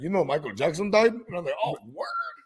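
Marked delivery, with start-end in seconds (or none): 0.0-1.1 put-on heavy, laid-on, thick Hungarian accent. Quoting a man from their jail days, in a thick Hungarian accent. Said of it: "He had a thick-ass Hungarian accent".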